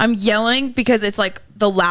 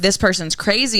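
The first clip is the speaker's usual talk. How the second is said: normal talking voice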